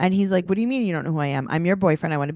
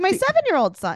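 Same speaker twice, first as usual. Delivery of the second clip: scream, pitched higher. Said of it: "So she's screaming".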